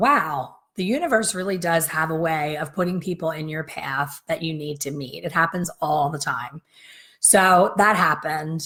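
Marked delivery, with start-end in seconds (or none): none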